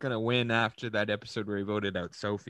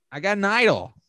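shrill, squeaky, very loud put-on high voice; 10 semitones higher, 8 dB louder than usual. Discussing how a man sounds, put-on high voice. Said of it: "He does have like a high voice like this".

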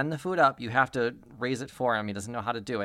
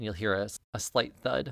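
plain

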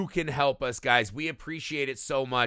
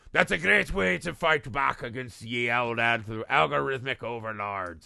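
full put-on buccaneer pirate accent; 2 semitones lower than usual. A podcast host asks listeners for ratings and reviews, in a pirate accent. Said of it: "What is this accent you're doing? Why are we doing pirates?".

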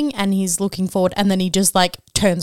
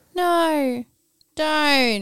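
put-on weak, emotionless, dead flat reading, no urgency; 8 semitones higher than usual. Mocking an actor's weak line reading in a film: imitating a flat, lifeless line reading. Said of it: "the infliction in his voice just sucked".

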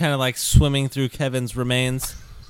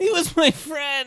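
shrill, slow, drawn-out angry yell in a character voice; 14 semitones higher than usual. Voicing a character grieving a killed friend: furious in-character yelling. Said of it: "Skylar yelling all this".

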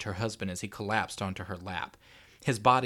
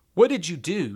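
hoarse, raw, raspy, high croak; 9 semitones higher, 8 dB louder than usual. A woman, feeling cold and empty inside, questions him: croaked, raw and raspy. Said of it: "She croaked, her voice raw and raspy".

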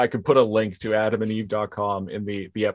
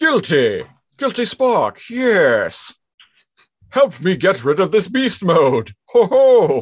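loud, high, swooping put-on voice; 9 semitones higher, 7 dB louder than usual. Acting out a made-up scene, voicing Megatron: Megatron voice. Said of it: "Megatron is like".

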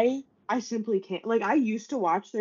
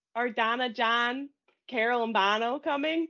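mock, cartoonish, exaggerated Chicago accent; 3 dB quieter than usual. Quoting someone who teases the speaker's mom's family, in a cartoonish chicago accent. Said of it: "my mom's family's Chicago accents".

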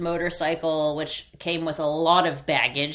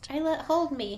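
put-on little girl ghost voice, much higher; 10 semitones higher, 4 dB quieter than usual. Joking with a co-speaker about scary ghosts, little girl ghost voice. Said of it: "He's a little girl ghost".

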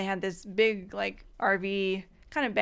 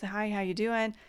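put-on confused voice; 3 dB quieter than usual. Retelling a man greeting unexpected distant cousins, imitating a confused greeting. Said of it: "And he's like really confused".

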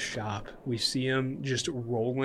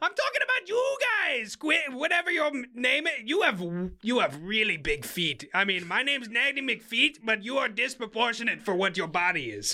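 put-on hag character voice, much higher; 11 semitones higher than usual. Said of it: "I am the hag of [name]".

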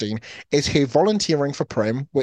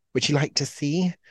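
coy put-on delivery; 3 dB quieter than usual. Retelling a film scene, quoting Katniss about her flaming dress: coy Katniss line. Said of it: "she very coyly says".

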